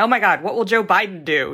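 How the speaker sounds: ordinary talk, nothing marked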